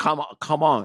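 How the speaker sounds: put-on, imitated Vietnamese accent. Retelling how a woman said thank you in Vietnamese, imitating a Vietnamese accent. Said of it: "You got to do the accent".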